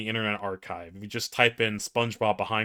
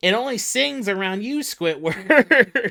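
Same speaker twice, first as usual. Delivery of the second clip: very high-pitched, loud, squeaky cartoon voice; 12 semitones higher, 8 dB louder than usual. Reading a meme's dialogue aloud, doing the voices: terrible SpongeBob impression. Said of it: "My terrible SpongeBob impression".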